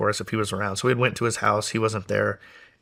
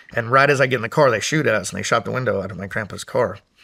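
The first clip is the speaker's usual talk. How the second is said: ordinary delivery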